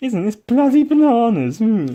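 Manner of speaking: zany, swooping, very high and loud wacky voice. Describing his usual video persona, then demonstrating the crazy wacky character voice. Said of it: "which is all crazy and wacky and whoa".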